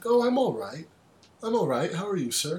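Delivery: put-on formal tone. Teasing another speaker about his greeting, imitating Gary's formal tone. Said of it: "the way you said that was so formal".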